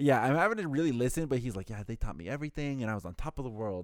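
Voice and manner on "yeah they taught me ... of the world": put-on heavy Persian accent. Retelling what an older man said about his life: imitating a thick persian accent. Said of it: "Very thick accent".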